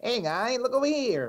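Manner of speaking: very high, cartoonish devil voice. Calling a story a fabricated work, imagining Satan's voice calling out, South Park Satan voice. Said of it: "Satan's voice going".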